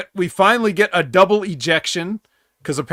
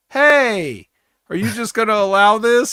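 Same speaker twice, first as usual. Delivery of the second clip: put-on complaining tone, higher pitched; 4 semitones higher than usual. Describing a wrestling heel group, the speaker acts out their complaint to the referee. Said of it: "sit and complain to the referee like".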